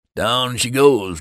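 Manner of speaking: lazy, stretched-out, loud, high drawl. Joining a toast at the table as the drinks arrive; drawled. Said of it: "drawled Charlie".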